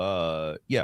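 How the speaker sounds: dull, vague, unsure uh. Showing an impression of Elon Musk answering a statement: Elon Musk impression. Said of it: "my impression of him is just".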